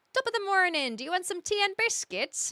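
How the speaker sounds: put-on Irish accent. Answering chat by trying out a line in an Irish accent. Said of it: "you want to learn the Irish accent".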